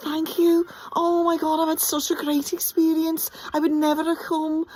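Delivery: very high, effusive, bubbly gushing. Retelling what a niece said after chasing the actors off stage, imitating a bubbly fan. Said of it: "they were so bubbly".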